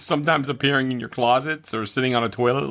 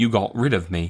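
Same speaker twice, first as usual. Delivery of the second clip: put-on goblin voice, lower pitch; 5 semitones lower than usual. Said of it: "Is that better?".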